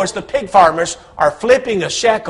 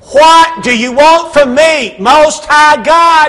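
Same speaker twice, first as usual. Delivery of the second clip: booming, loud, drawn-out possessed-sounding cry; 6 semitones higher, 6 dB louder than usual. Retelling the story, the possessed man runs out and addresses Jesus: loud voice. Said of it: "with a loud voice".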